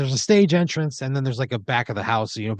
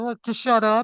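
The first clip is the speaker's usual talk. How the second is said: very high voice, muffled as through a barrier; 11 semitones higher than usual. Retelling a voice heard from inside a closed laptop, muffled voice. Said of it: "you hear like a muffled voice go".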